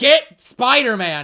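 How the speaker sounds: very loud, slow, bellowing yell.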